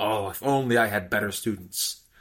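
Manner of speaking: mock scornful, superior, disdainful tone. Retelling how a seminar coach looked at the class: imitating disdain. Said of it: "he's looking at the class with disdain".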